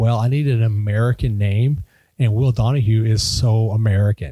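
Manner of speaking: ordinary talk, nothing marked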